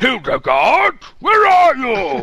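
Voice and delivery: very loud, very high, swooping, drawn-out put-on man's voice. Showing how a man apparently speaks, in a loud imitation of a man. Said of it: "That's how he speaks, apparently".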